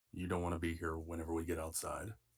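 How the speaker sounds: in a whisper. In a tabletop game, the player has the character whisper to a soldier, whispering. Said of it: "I'm gonna whisper to the soldier".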